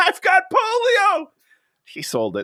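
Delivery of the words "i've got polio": play-acted giggling, very high, gleeful and delighted. Retelling a movie character's joke, imitating someone giggling. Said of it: "he's giggling".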